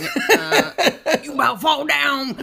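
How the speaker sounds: weird, very slow, loud country drawl. Retelling what the 9-year-old Odie says to Rex: imitating Odie's weird farm voice. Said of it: "He says it really weird, like he's like down on the farm or something".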